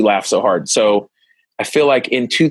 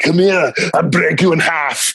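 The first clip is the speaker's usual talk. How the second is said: crazy put-on voice, pitched up, pushed high; 5 semitones higher than usual. A father playing with his son, doing an Arnold voice. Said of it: "my daddy's doing a crazy voice".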